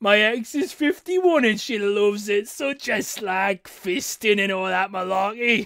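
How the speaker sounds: put-on leering, perverted dirty old man voice. A streamer reads a viewer's message aloud, in a perverted old man's voice. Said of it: "I keep reading it in a fucking perverted old man's voice".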